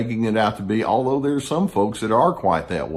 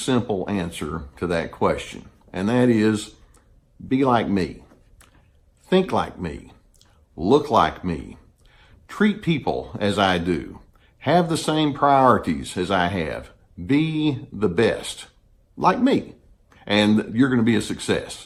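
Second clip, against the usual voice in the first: ordinary delivery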